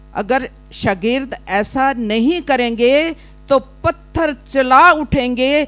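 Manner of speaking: loud, slow, stern scolding tone. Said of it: "इस तरह उसने फरीसियों को झिड़का".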